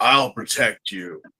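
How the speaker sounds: very low, dead serious spy voice. Describing how a character's voice changes after waking from a dream: Loid Forger serious spy voice. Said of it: "that super serious spy voice".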